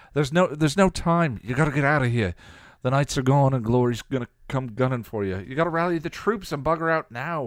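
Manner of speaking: heated, angry voice. Narrating a character answering the watcher's accusation, countering angrily. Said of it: "he countered angrily".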